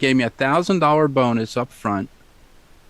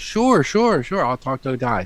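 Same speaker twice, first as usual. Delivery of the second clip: ordinary delivery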